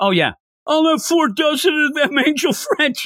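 very high, obnoxious, pushy, rude voice. Retelling a scene, imitating a rude customer buying all the donuts. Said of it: "there was a real a-hole that came in like".

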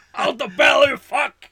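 loud, high, drawn-out put-on angry shout. Quoting a movie scene: imitating Al Pacino shouting. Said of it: "Calm down, would you?".

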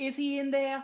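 put-on very high, loud, shrill woman's voice with Boston accent. On set, retelling an older lady's question: imitating a Boston accent. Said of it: "this lady in her Boston accent".

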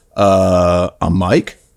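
mock rising uptalk intonation. Retelling a student's answer when asked his name: imitating a student's questioning uptalk. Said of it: "Always ask a question".

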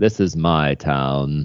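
very slow, drawn-out delivery, stress on "town". Pitching a character idea, saying his line in an Obi-Wan Kenobi voice. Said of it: "Or maybe I should say it in an Obi Wan voice".

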